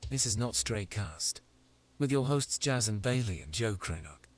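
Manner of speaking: speaking with a British accent. Introducing the podcast and its hosts: British accent. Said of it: "British guy we have now".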